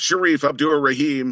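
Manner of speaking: put-on booming, big, high arena-announcer yell. Retelling announcing a home player's basket: imitating an arena announcer yell. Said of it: "me yelling, ... in my biggest voice".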